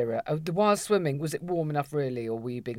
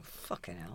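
mock mutter under the breath, much lower and quieter; 9 semitones lower, 19 dB quieter than usual. Retelling a moment with the speaker's mother, muttering under the breath. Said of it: "I'm there under my breath going".

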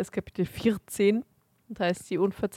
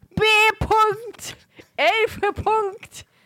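shrill, very high shouted yell; 13 semitones higher, 4 dB louder than usual. Echoing the other speaker's shouted line back at them: mimicking a shout. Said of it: "Warum schreist du denn Belfer jetzt so".

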